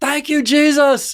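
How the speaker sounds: very high, loud, top-of-the-lungs scream. Retelling how a player shouted after dropping a catch: imitating someone screaming. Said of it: "scream out at the top of his lungs".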